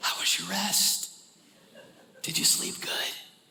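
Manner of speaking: soft, hushed, gentle whisper. Showing how a parent gently wakes a child: imitating gently waking a child. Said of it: "like I'm waking up one of my kids".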